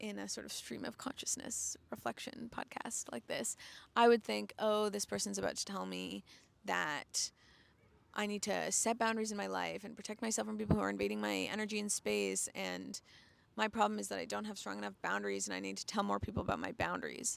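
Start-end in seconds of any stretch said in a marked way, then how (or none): none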